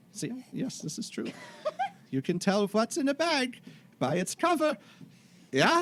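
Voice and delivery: put-on terrible German accent, pitched very high, swooping. Playing a character in a group roleplay, in a terrible German accent. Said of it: "this terrible German accent".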